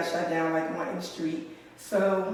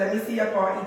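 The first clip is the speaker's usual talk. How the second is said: ordinary talk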